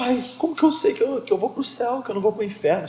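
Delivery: very high, mock desperate sobbing child voice. Father retells his son sobbing in the back seat, imitating a crying child. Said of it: "E ele chorando, chorando, e dizendo".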